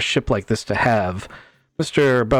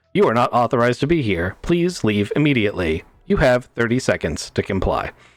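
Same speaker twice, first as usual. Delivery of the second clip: menacing, mechanical put-on robot voice. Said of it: "pulls like an Ed two oh nine voice".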